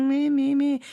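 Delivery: tiny creature whinging, high and whiny. Describing a tiny creature in the corner of their room that whinges, whingy little creature voice. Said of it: "whinges at me like".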